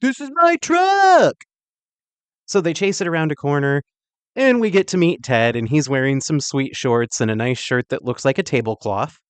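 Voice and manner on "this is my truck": very high, loud, drawn-out stretched yell. Recapping a movie, quoting Jeff at the tow truck driver: imitating someone yelling. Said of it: "Jeff yells at the driver a lot".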